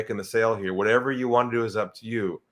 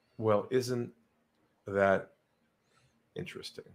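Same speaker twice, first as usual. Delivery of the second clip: lowered voice, much quieter; 7 dB quieter than usual. Retelling what the speaker said to a man after a deep breath, lowered voice. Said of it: "I lowered my voice".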